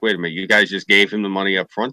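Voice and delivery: ordinary talk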